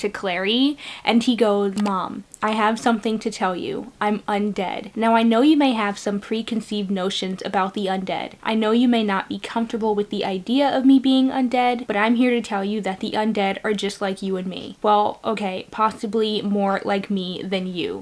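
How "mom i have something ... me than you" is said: plain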